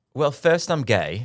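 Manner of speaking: loud, very British, put-on posh gentleman accent. Trying out accents, answering a question in a very British accent. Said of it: "You sounded very British".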